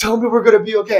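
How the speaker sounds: frightened, pleading voice. Retelling what a scared stranger in the group begged: imitating a scared plea. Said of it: "He's scared".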